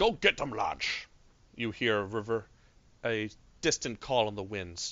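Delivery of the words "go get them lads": put-on Scottish accent bent toward Australian. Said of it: "apparently doing an Australian Scottish".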